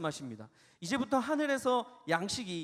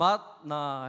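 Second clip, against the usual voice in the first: 맛 lifted up, 나 drawn out and falling; 4 semitones lower, 5 dB louder than usual. Following the Naver dictionary pronunciation guide, rise on 맛, long fall on 나. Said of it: "맛에서 올리고 나에서 내리면서 길게 뺀다".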